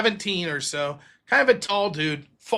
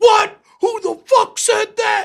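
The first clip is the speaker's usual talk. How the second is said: mock furious, very high, loud, angry ranting outburst; 7 dB louder than usual. Retelling how they teased Heath when he came in for work; imitating Heath going off. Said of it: "He's just going off".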